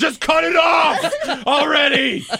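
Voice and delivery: high, slow, laughing yell.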